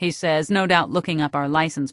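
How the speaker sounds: ordinary delivery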